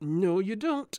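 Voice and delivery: forced through clenched teeth. The king holds Micah back as Micah struggles, speaking through gritted teeth. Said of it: "he said through gritted teeth".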